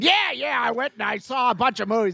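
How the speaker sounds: mock yelling voice, high pitch.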